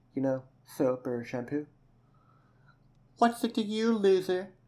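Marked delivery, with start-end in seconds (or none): 3.2-4.5 very high, scornful, sneering voice. Asked for help for another girl, she answers: sneering.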